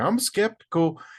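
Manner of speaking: very high-pitched put-on Southern country accent. Imitating a TV show's main guy who throws his country accent around: imitating a country accent. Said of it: "he just throws his country accent at everybody".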